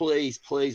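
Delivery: acted tearful, crying begging plea. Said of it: "I'm begging God".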